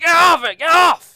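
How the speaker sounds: crying out in pain. Voicing a captain being bitten in battle: crying out in pain. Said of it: "he kind of cries out".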